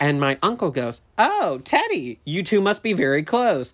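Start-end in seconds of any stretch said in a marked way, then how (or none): 1.2-3.7 pointed sarcastic tone with swooping pitch. Retelling an uncle's quip to a grandmother: imitating a sarcastic remark. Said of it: "he was being, like, sarcastic".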